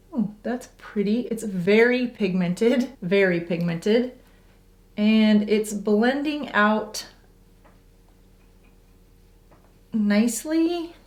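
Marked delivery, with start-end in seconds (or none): 4.9-10.8 slow, unsure, hesitant, holding-back delivery. Trying a new blush on camera and judging the blend: hesitant. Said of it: "Can you hear the hesitation in my voice?".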